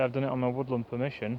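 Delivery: fast, rushed delivery. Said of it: "Sorry, I talk fast".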